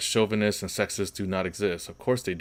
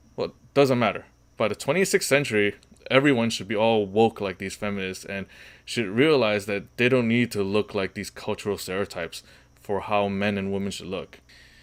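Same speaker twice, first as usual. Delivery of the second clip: ordinary talk, nothing marked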